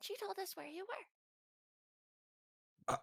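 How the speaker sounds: very high, very soft, hushed goblin half-whisper. A visitor answers how they found the group, half-whispering because everyone's sleeping. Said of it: "they're gonna whisper because everyone's sleeping".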